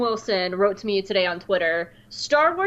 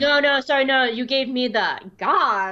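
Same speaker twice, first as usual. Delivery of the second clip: put-on Valley Girl voice, higher; 4 semitones higher than usual. An actor assigned the Valley Girl voice in a group reading speaks in Valley Girl voice. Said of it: "I'm going to be talking like this the entire time".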